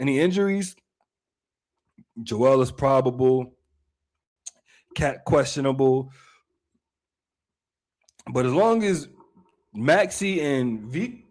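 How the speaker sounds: hiccuping while speaking. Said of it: "I got the hiccups".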